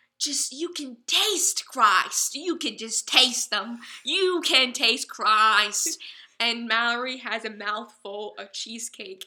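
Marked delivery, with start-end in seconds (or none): 0.2-6.0 loud, play-acted fervent, rapturous passionate delivery. Retelling a woman throwing her fist in the air: imitating a passionate speaker. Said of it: "was just so passionate about Christ's word".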